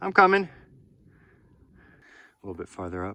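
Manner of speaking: very loud, breathless, huffing and puffing. Climbing up to a ledge, talking while huffing and puffing. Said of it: "Sorry for my huffing and puffing".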